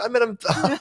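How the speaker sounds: high voice, laughing while speaking.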